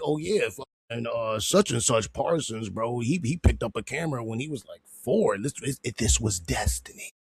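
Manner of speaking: ordinary talk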